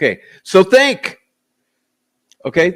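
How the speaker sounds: pressing, swooping excited voice. Speaker explaining his decision about the testimony, excited, raised voice. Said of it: "I'm getting excited and I raise my voice".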